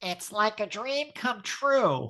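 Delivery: strongly nasal, very high whine. Remembering a group outing, the speaker imitates Debbie Grant's very high nasal voice. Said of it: "in her very high, nasally voice saying".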